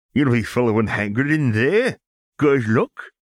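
high, loud, sinister, gleeful, ominous cackling. A man sends two boys off to their detention, cackling ominously. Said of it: "he cackled ominously".

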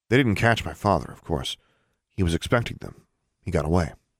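ordinary delivery

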